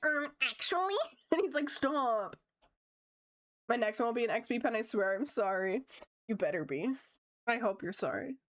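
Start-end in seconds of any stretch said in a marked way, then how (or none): 0.0-0.9 put-on nerdy know-it-all voice. Retelling doing the voice to a brother; nerd voice. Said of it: "I love doing nerd voice".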